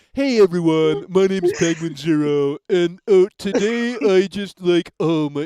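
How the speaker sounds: dopey, stupid voice, every word very drawn out. Mocking a YouTuber who just sits there: stupid Penguinz0 voice. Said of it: "that stupid voice".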